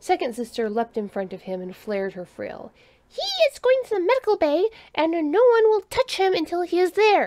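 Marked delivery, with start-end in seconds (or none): 3.1-7.3 very high, loud, sharp snapped retort. A character leaps in front of the returning human and snaps at the crowd, snapping. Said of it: "[name] dropped the drone she had been unpacking back into its case and quickly called off the search and rescue operation".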